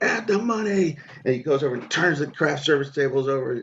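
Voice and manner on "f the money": acted-out very high, ringing, echoing scream. Retelling a director on set who screamed: imitating a scream. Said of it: "He just screamed, echoing".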